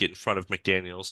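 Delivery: normal talking voice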